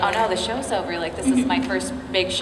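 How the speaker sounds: normal talking voice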